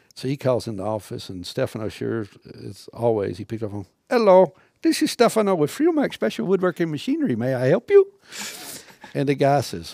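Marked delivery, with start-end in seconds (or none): 4.0-8.1 put-on very high, sing-song, swooping Indian accent. Retelling a coworker answering the office phone: imitating Stefano's Indian accent. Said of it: "he's got a freaking Indian accent when he talks".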